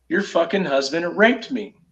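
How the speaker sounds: ordinary talk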